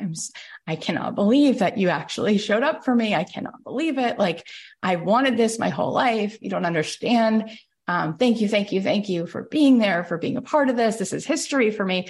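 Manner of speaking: acted bawling, tearful crying through every word. Retelling Jamie's winning moment on live TV: imitating Jamie bawling. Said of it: "she just starts bawling on live tv".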